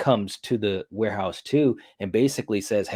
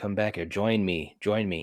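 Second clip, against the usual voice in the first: put-on flat, emotionless voice, quieter; 6 dB quieter than usual. Retelling a movie scene, a duplicate calls a man back: imitating an emotionless duplicate. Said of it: "she's talking, you know, in a different tone because she's a duplicate with no emotion".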